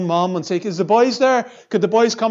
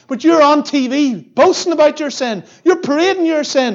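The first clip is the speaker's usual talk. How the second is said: play-acted yelling, raised and high-pitched shout; 8 semitones higher, 5 dB louder than usual. Retelling watching a preacher interviewed on tv and yelling at the screen; retelling shouting at the tv. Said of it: "I'm shouting at the TV going".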